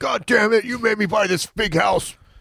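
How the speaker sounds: shrill yelling, pitched very high. Speaker quotes a man describing talking to an urn by the kitchen table: retelling a yell. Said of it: "Sometimes I yell at her".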